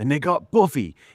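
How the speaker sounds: put-on high-pitched, full Jersey accent. Retelling how a line sounded when the character gets vamped up: David Boreanaz's Jersey accent. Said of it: "It sounds so Jersey".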